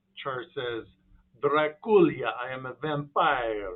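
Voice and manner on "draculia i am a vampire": put-on very loud, very slow, booming cheesy vampire accent. Speaking as a vampire character, cheesy vampire accent. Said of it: "I don't know why I'm talking like that".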